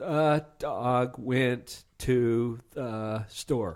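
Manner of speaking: very slow, halting, choppy word-by-word reading. Explaining reading fluency, reading a sentence in a choppy, halting way. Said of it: "read out loud in kind of a choppy way".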